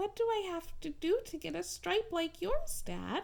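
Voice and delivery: tiny, soft-spoken, very small high voice. Narrator reading Zebra asking his dad a question, in a very small voice. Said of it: "in a very small voice he asked".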